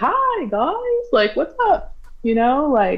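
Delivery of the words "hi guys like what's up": put-on, very high, sing-song, jolly and polite. Speaker retelling how their dad greeted people at the truck; imitating dad's jolly, polite greeting. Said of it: "just trying to be like jolly and polite".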